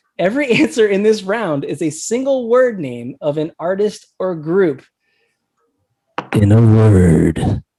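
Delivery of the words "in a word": very low, very loud booming trailer announcer. Reading out the quiz round rules in a movie trailer voice. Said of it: "my trailer voice".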